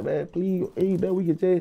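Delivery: high, crying, tearful, begging tone. Retelling how the speaker cried to her, begging her to help: retelling tearful pleading. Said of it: "I'm in there crying to her".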